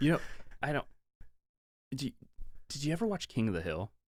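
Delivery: speech broken up by hiccups. You ask someone a question on air, then apologize for the bad radio; hiccuping. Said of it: "I was like hiccuping".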